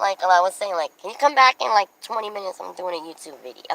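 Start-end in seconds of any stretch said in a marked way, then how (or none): none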